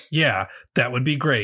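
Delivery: mock sarcastic tone. Retelling how someone answered an offer of a suit of armor, mock-sarcastic. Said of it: "Elias very sarcastically went".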